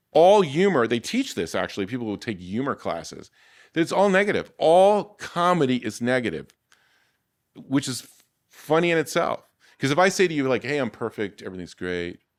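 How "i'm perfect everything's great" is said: earnest, serious, dead-straight delivery, lowered voice. Showing how an unfunny line sounds: serious. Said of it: "I'm trying to be serious".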